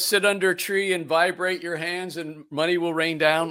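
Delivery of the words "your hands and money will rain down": normal talking voice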